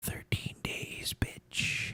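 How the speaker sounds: hushed whisper under the breath. Retelling what a man whispered while shaking his hand, retelling a whisper. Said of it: "and he whispers".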